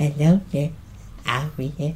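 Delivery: sinister, hushed, creepy whispered villain voice. Imitate how the actor sounded in the Child's Play trailer, like the Joker whispering. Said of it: "sounded like the Joker whispering".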